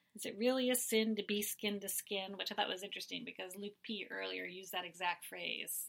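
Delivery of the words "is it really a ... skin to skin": normal talking voice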